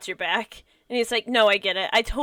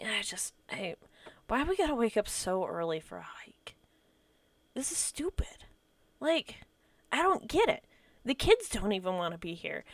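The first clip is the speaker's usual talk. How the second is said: quiet, weary, gloomy, depressed complaining tone; 9 dB quieter than usual. Voicing a character who complains to a player about an early hike: depressed and tired character voice. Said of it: "he just looks super depressed and tired".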